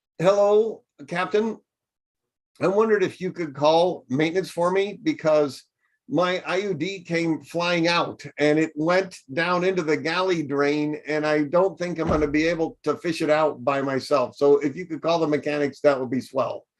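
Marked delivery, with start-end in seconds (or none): none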